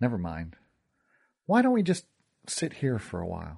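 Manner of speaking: ordinary delivery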